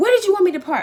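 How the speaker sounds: half-shouted, high voice. Speaker retelling what the man driving the car said to them, kind of yelling. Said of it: "he kind of yells at me".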